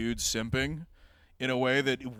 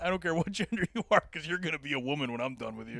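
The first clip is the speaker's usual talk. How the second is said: villainous mad scientist character voice; 2 semitones higher than usual. Joking with another speaker about gender bender kinks: mad scientist voice. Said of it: "A mad scientist who is definitely not".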